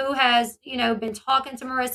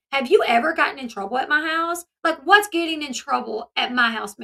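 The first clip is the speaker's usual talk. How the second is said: ordinary talk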